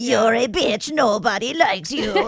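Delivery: slow, comic, filtered voice. Describing how a documentary reads out texts: imitating a funny filtered voice. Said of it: "a funny, like, filtered voice".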